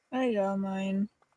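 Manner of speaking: very soft, quiet, sorrowful murmur. Reporting a result while in character, sounding sad. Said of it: "You sound so sad about it".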